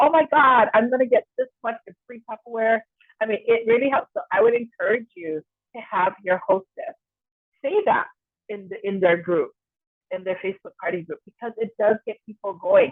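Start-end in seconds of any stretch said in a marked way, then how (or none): 0.0-2.8 mock thrilled, excited, gushing scream. Retelling a party host telling people she got a thousand dollars, imitating excited screaming. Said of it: "she's like screaming and going".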